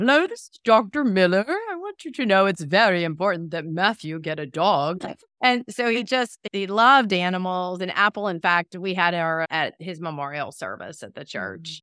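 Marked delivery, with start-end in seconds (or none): 0.0-5.1 put-on light British accent, sing-song. Retelling a call to the home phone from someone posing as a doctor; little British accent. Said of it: "talking in this little this British accent".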